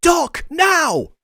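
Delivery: very loud, high-pitched, shrill yelling. Playing a character in combat, calling Doc to act now: yelling an order in character. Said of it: "I yell".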